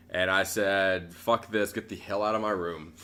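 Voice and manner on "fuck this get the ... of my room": usual speaking voice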